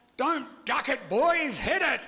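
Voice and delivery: high-pitched, full-volume, gruff barking yell. Recalling a beach game, the speaker retells a gruff voice yelling at the boys. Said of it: "this gruff voice yells out".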